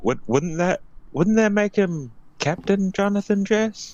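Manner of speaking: loud yelling, shouting out. Calling out in character about who is captain now: yelling out. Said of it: "I would yell out".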